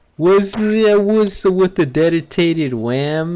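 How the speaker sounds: mock slurred words. Retelling a kid questioning game developers, imitating his slurred words. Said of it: "he's just like slurring his words".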